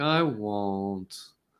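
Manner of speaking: very low, drawn-out, exaggerated mock sorrow. Asking the other speaker to say it with sadness and showing how, mock sad. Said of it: "could you say it with like some like sadness".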